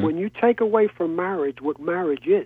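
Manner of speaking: ordinary talk, nothing marked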